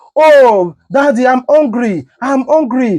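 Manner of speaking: mock sobbing, pleading voice of a hungry child. In a comparison of hungry children pleading with their father, mock crying child. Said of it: "They are crying".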